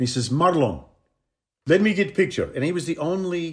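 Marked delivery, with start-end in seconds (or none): 0.3-2.5 sort of Hungarian, put-on accent. Retelling what a photographer said at a big round table, in a hungarian sort of accent. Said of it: "with this Hungarian sort of accent".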